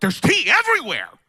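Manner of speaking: very high, shrill, squealing outcry. Retelling how a coworker found tea spilled in the van: retelling a scream. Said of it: "he starts to scream".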